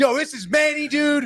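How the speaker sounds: very high, wound-up, hyped, far from calm. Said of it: "would you talk calmly, or would you be like".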